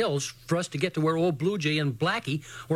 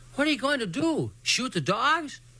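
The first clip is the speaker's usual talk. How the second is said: worried, anxious voice, pitched up; 8 semitones higher than usual. Little Jim calls out as Circus is handed the rifle; anxious voice. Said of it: "in an anxious voice".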